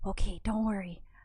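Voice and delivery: soft, whispered speech. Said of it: "I whisper back".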